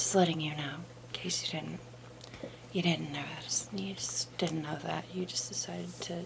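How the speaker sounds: soft, sarcastic whisper.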